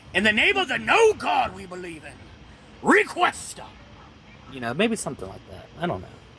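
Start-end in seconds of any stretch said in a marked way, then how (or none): 0.2-3.7 very high, very loud pulpit preaching voice. Speaker suggests being more preachy next time, pulpit preacher voice. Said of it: "Maybe I'll become more pulpit preachery".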